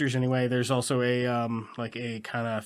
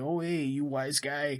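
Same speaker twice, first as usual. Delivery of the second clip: put-on New York accent; 2 semitones higher, 4 dB quieter than usual. Describing a movie cop's way of talking: New Yorker accent. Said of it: "New Yorker thing going on".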